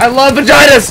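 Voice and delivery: screaming, yelling at full volume. Yelling a joke during a game: screaming loudly. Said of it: "I screamed that so loud".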